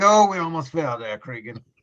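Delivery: put-on incredibly old man's voice. Voicing an incredibly old character stepping down the stairs: very old character voice. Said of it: "he's just so incredibly old".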